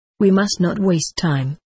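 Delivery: plain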